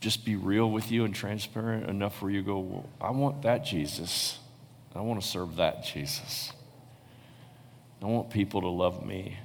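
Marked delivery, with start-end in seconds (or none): none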